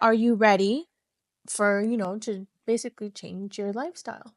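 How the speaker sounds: ordinary talk, nothing marked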